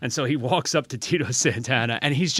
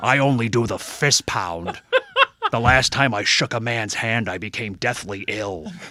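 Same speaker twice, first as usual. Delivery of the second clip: measured, unhurried delivery. Retelling meeting the governor at a wrestling convention: Jesse Ventura impression. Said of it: "Such a good impersonation. You got the voice down".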